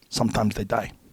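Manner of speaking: put-on Korean accent. Retelling what an intense man who trained troops said: thick korean accent. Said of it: "with his thick Korean accent".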